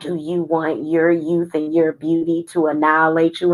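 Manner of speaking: sinister, malevolent, wicked spirit voice. Speaker retells a spirit coming through in a video, imitating an evil, wicked voice. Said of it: "had a real evil, wicked voice".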